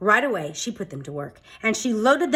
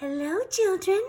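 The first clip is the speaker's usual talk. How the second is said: sugary, sweet, very high-pitched voice; 11 semitones higher than usual. Narrator reads someone greeting the children from the hall, in a sweet voice. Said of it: "said someone in a sweet voice".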